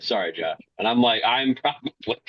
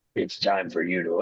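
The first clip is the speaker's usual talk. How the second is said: put-on gritty voice, lower pitch; 6 semitones lower than usual. Retelling a movie cameo's line: Henry Cavill's Wolverine voice. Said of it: "his voice, he literally just went".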